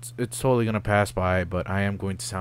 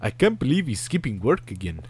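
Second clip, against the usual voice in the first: bad, laid-on put-on French accent; 4 semitones higher than usual. Voicing Sparrowson while playing a game, in a bad French accent. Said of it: "This is not an accurate representation of my French accent".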